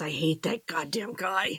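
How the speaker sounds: muttered under the breath. After another character's question, muttering about him, muttered under breath. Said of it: "And I mutter under my breath".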